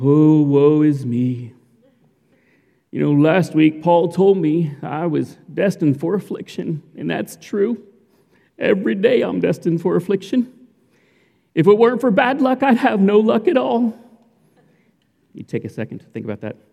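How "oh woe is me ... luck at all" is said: terrible cartoon donkey voice. Relating to the Winnie-the-Pooh characters, doing a terrible Eeyore voice. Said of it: "I know it's a terrible Eeyore voice".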